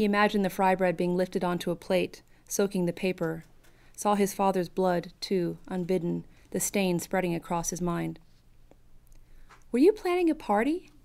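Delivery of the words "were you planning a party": sweet, solicitous, slightly raised voice. Claudia puts a question to him, sweet. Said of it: "Claudia's voice was sweet".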